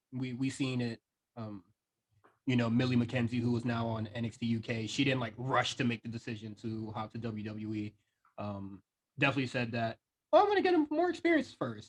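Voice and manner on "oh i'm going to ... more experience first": put-on very high, swooping, sing-song childlike voice. Quoting a young wrestler's decision in a child's voice. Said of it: "Why did you use that voice?".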